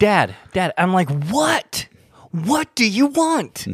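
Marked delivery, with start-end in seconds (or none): 1.1-3.7 put-on, very slow, high, drawn-out irritated snap. Retelling a reply to a child who keeps calling Dad: imitating own irritated snap. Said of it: "And so I snap".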